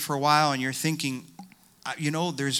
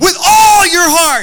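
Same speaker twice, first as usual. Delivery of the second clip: yelling, higher and louder; 18 dB louder than usual. Retelling how a big guy came up behind and yelled in his ear: imitating someone yelling. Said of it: "he starts to yell in my ear".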